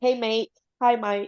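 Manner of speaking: slow, put-on Australian accent. Imitating how Australians call their friends: put-on Australian accent. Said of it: "Don't they call their bros over there and buddies mates?".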